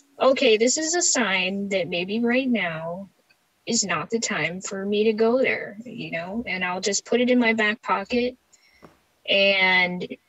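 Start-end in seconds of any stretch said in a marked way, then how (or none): none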